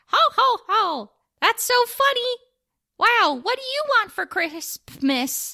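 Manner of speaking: very high, slow, drawn-out puppet voice. Acting out the mall puppet greeting children: Crispy Claus puppet voice. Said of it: "Crispy Claus is like".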